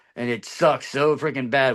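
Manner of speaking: ordinary delivery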